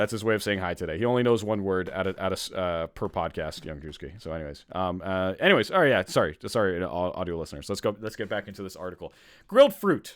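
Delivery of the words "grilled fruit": loud, pitched-up, angry outburst. Reading out a heading from an article, sounding mad. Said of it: "why did I say that like I was so mad?".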